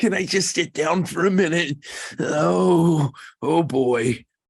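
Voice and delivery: put-on trembling, high elderly voice with stretched oh. Describing an old person maybe having a diabetic reaction, imitating a shaky old person.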